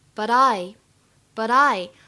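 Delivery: "but I" linked together. Explaining american pronunciation to everyone, linking 'but i' together. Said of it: "注意一下这个but I 可以连读".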